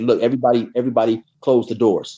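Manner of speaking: usual speaking voice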